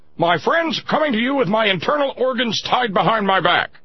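very high, loud, put-on broadcaster delivery. Showing what Rush Limbaugh Radio would sound like: Rush Limbaugh radio voice. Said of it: "that's what Rush Limbaugh Radio would sound like".

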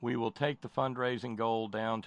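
ordinary delivery

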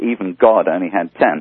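usual speaking voice

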